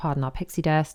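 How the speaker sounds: ordinary talk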